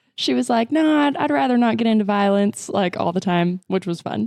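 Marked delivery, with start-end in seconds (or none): 0.7-2.7 put-on a little Southern drawl, lightly accented. Imitating a past game character who avoids violence: slight Southern accent. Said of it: "she had a little Southern accent".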